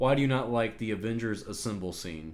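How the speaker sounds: ordinary delivery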